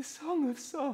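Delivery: quiet, soft, hushed murmur, slightly high. A drama character repeats the words, quietly.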